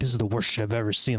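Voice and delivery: mock angry, mad tone. Retelling what an upset man in the theater said: imitating a mad moviegoer. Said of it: "he gets so mad".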